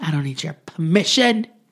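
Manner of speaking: acted indignant drunk voice, mock indignation. Retelling what a woman told the bartender, acting out indignant drunkenness. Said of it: "She's indignant drunk now".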